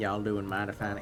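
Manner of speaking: put-on smooth southern voice. Speaker from canada, asked to do the accent, tries it: smooth southern accent. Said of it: "asked me to do a smooth southern voice".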